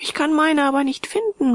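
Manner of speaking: muttering with chattering teeth. Haldane replies to the narrator about his blankets, murmured with teeth chattering. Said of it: "murmelte er daraufhin".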